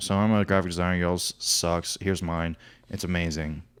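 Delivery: mock low, flat, dead-level, unvaried monotone. Imitating a woman who talks in a monotone voice: flat monotone voice. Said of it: "she talks in such a monotone voice".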